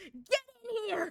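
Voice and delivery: abrupt, sudden, high-pitched shout. Retelling how a friend lifting her hoop skirt called out: imitating someone shouting. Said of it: "and she just shouts".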